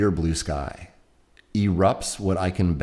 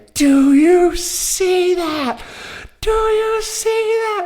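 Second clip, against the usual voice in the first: thrilled, very high, climbing excited yell; 8 dB louder than usual. Retelling seeing something skim across the water, yelling to a companion: retelling screaming excitedly. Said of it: "I'm screaming at him basically".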